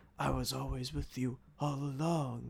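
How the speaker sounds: very quiet, gentle, soft, hushed demon voice. Describing a movie scene, quoting the demon, imitating the demon's soft voice. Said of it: "Like in that soft voice he had".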